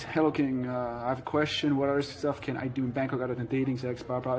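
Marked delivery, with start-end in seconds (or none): none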